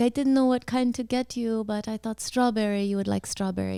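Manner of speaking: put-on Russian-ish accent. Retelling what a limo driver said, imitating a Russian-sounding accent. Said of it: "a kind of a Russian sounding accent".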